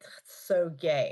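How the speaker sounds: slow, smug, derogatory drawl.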